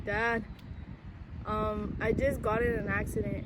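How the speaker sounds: ordinary delivery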